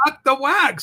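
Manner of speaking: play-acted, loud, very upset venting outburst. Voicing what another person is saying backstage: imitating someone very upset. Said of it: "He is very upset backstage right now".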